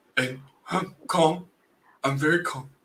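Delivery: overcorrected calm, barely audible low murmur. After being told to stop yelling, [name] lowers the voice, speaking too quietly. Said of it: "I can't hear you".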